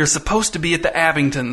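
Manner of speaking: ordinary delivery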